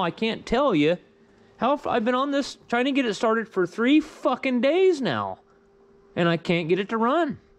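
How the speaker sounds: whiny and frustrated. After three days failing to start an engine, frustrated whining. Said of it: "I'm sorry if I'm sounding like I'm whining".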